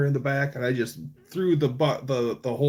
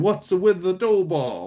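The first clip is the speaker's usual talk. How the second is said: put-on Sicilian accent, higher and faster; 5 semitones higher than usual. Retelling the owner's dad from Sicily walking in, imitating a Sicilian accent. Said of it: "he still talks like a this".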